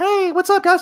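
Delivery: put-on very high squeaky girl voice. Recalling playing with a sister's toys, voicing a girl figure, imitating a girl's voice. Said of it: "she wouldn't even let me imitate the girl's voice".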